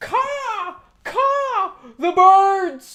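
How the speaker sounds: shrill, very slow, very high panicked shriek. Reading out how a panicking lady yelled in a restaurant: imitating a loud panicked yell. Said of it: "and yelled very loudly".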